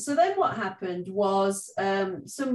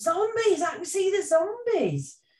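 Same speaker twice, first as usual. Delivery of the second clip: mock shrill shout, pitched way up; 11 semitones higher than usual. Recalling a day of play, the speaker acts out retelling someone's shout. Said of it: "somebody shouted".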